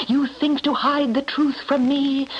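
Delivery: ordinary delivery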